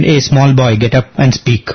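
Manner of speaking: usual speaking voice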